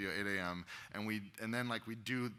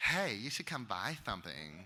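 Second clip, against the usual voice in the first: lisping male character voice. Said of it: "kind of a lispy guy".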